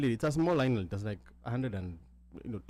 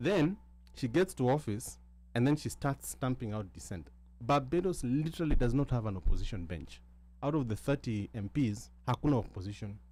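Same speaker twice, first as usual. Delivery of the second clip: normal talking voice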